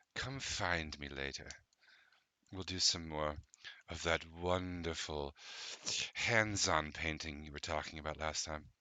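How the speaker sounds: close, barely-there half-whisper. Voicing a party guest leaning over to a player: half-whispering in someone's ear. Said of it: "leans over and whispers in your ear".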